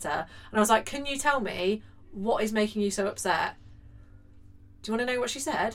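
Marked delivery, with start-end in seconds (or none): 0.9-3.6 pleading, imploring tone. Retelling pleading with a five-year-old after school: imitating pleading with a child. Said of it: "Pleading with a five-year-old".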